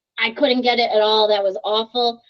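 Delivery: ordinary talk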